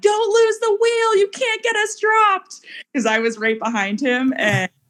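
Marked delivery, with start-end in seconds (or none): 0.0-2.6 play-acted shrill screaming, very high. Recalling a group ride going up a hill, retelling screaming at Wadi. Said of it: "I started screaming at Wadi".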